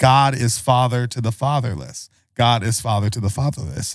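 usual speaking voice

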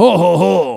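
loud, jolly laugh in a Cajun Louisiana accent. Repeating the santa laugh called louisiana santa: louisiana santa voice. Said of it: "That's like Louisiana Santa".

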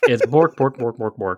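put-on puppet-like gibberish voice. Teasing a friend whose accents all sound alike, a speaker mocks: Swedish Chef impression. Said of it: "everything you do is the Swedish Chef".

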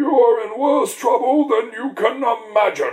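high, slow, talking tortoise character voice.

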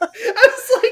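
high, loud, helpless laughter through the words.

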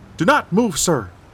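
shrill, high, far too loud barking. Narrator reads a police officer's line to the dazed man: barked, too loudly. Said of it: "she barked again, too loudly".

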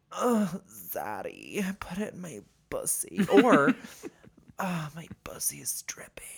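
very slow, lilting sing-song. Imitating a friend's voice memos: Mike impression. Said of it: "has been my Mike impression".

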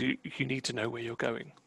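soft, trembling, unsteady voice. A game master voices a woman answering a player's request: shaky. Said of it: "she kind of shakily says".

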